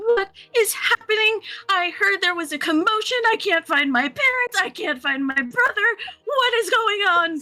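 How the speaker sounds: tearful, very high-pitched, pleading sobbing blubber. Walking to the front desk and police, unable to find parents, crying as hard as possible. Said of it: "I'm crying as hard as I possibly can".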